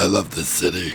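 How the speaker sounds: very deep, really bassy, very low voice. Imitating the reality show intro line: deep bassy Kat Von D voice. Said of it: "she's, like, really bassy".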